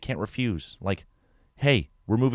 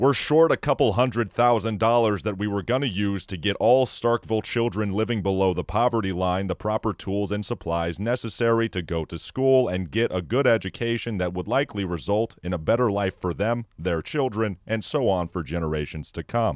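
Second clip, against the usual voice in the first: low, flat, droning monotone spoken in unison; 3 semitones lower than usual. Voicing the Board of Aldermen explaining the budget: low monotone voice. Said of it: "speak in unison and in a low monotone voice".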